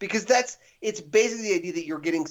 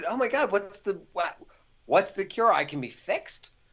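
put-on excited character voice. Retelling a film scene about a cure, imitating an excited character. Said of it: "you could see that he's, like, excited".

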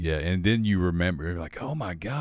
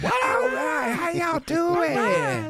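very high, pumped-up arena hype announcer voice. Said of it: "how [name] talks to the crowd".

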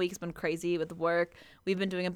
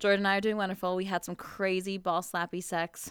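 usual speaking voice

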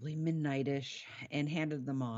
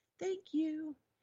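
put-on very high, wee tiny child voice. Describing voices they overheard, the speaker mimics a little tiny child's voice. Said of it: "this little tiny child's voice".

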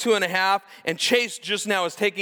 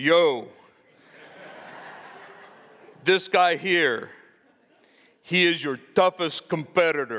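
put-on tough-guy, street-tough voice; 3 semitones lower than usual. Retelling a man pointing at the mirror, Rocky voice. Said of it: "I'll try to do this in my best Rocky voice".

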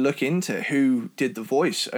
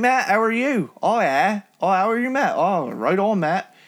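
rural British English country twang, pitched up; 7 semitones higher, 3 dB louder than usual. Demonstrating how a greeting sounds in a regional UK accent; rural British accent. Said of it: "the UK's answer to the kind of Southern twang".

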